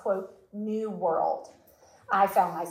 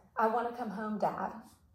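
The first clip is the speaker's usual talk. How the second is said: soft, trembling, unsteady voice; 2 semitones higher, 5 dB quieter than usual. Retelling a phone call home to Dad, the speaker repeats her words, shaky voice. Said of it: "I said with a shaky voice, like now".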